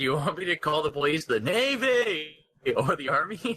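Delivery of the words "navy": high, drawn-out, stretched shout. Reading a character's line aloud as asked: shouting the word NAVY. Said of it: "You need to shout that word".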